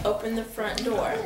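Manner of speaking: plain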